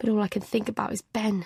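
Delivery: ordinary delivery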